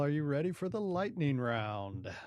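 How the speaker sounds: loud, hyped little DJ announcer voice. Introducing the lightning round to April in a DJ announcer voice. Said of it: "You like that little D J announcer voice?".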